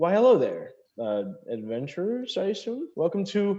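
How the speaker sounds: elf attendant voice. Voicing an elven male at the bathhouse front desk greeting adventurers: elven male clerk voice. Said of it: "And he goes".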